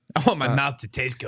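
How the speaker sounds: monster puppet character voice. Saying a line about wanting a good-tasting mouth: Cookie Monster voice. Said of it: "said it like the fucking Cookie Monster".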